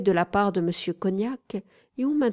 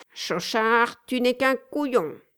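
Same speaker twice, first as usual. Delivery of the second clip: nasal voice of a pet parrot; 4 semitones higher than usual. Narrator reads a pet parrot repeating its master's phrase, nasal parrot voice. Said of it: "il entendit une voix nasillarde".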